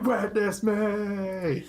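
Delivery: very high, loud shout, with "me" drawn out long. Recalling what the line reminds them of: Mad Max "Witness me" shout. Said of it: "it makes me remember Mad Max".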